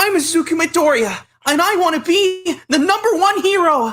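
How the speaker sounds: very high, loud, belted, slow and drawn out. Asked by the others to try a Deku voice, giving it a try: Deku voice. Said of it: "Blitzo wants us to do a Deku voice".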